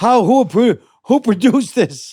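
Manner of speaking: high-pitched, outraged yelling. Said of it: "just to yell at the screen".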